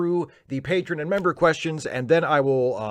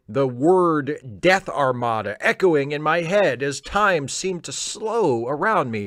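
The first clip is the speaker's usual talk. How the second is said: ordinary talk, nothing marked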